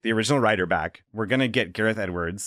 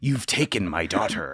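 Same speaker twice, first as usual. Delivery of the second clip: put-on American accent; 2 semitones lower than usual. Joking about how a film's actor might sound: Liam Neeson doing an American voice. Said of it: "the Liam Neeson doing an American voice".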